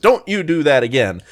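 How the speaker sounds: ordinary talk, nothing marked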